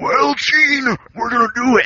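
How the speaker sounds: very high, slow, drawn-out wrestler promo voice. Retelling how a wrestler sounded in his old promos: imitating a wrestler's promo voice. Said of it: "I'm gonna try to do this justice".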